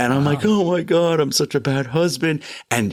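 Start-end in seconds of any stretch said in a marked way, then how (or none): 0.4-2.4 mock weepy crying, high and tearful, blubbering. Retelling getting out of trouble with his partner, quoting himself: acting out his own crying. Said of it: "I start crying".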